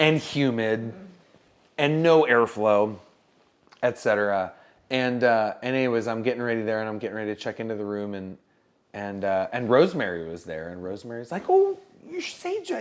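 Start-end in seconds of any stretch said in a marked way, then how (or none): 11.5-12.8 cheery, bubbly voice, pitched very high. Retelling how Rosemary greeted the speaker at check-in: bubbly voice imitating Rosemary. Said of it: "the bubbly way".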